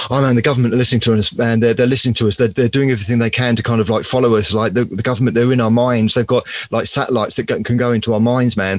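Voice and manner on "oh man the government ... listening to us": plain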